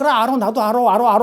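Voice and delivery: mocking, scornful put-on voice. Retelling how someone ridiculed the truth, doing a mocking imitation. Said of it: "흉내를 내 조롱하면서".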